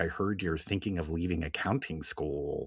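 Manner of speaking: put-on, play-acted, thoroughly disappointed, let-down tone. Retelling what a character says about leaving accounting school: imitating Cousin Joel sounding disappointed. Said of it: "He's so disappointed".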